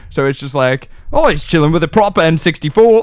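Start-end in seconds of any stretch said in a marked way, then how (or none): 1.1-3.0 put-on male Cockney accent. Imagining a guy who uses rhyming slang, speaking in a Cockney accent. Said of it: "a racist guy from like with a Cockney accent".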